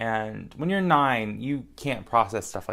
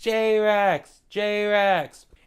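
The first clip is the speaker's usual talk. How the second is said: put-on child scream, higher and louder; 10 semitones higher, 4 dB louder than usual. Retelling a kid leaning out a car window, imitating a kid screaming. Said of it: "started screaming".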